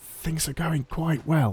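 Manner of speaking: said very quietly. Saying something quietly so as not to jinx it: said very quietly. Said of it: "I'm gonna say it very quietly so I don't jinx it".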